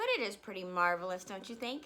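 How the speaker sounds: usual speaking voice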